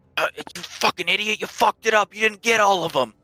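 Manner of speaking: whispering from afar. Voicing a hidden bandit scolding another: distant whisper. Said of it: "You hear a distant whisper".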